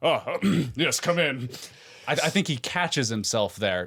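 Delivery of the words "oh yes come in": high, slow, led by a throat-clear. Imitating a character interrupted in a scene: imitating a character clearing his throat. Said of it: "clears his throat like".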